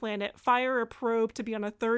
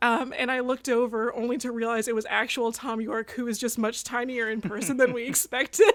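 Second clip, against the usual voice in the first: plain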